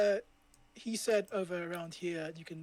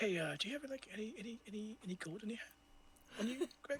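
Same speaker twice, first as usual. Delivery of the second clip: put-on sheepish whisper, much quieter; 4 semitones higher, 11 dB quieter than usual. Retelling someone asking another player for gold, in a mock-sheepish whisper. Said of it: "sheepishly whispers to him like".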